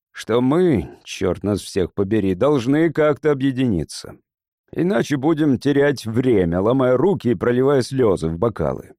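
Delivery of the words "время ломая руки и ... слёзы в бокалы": ordinary delivery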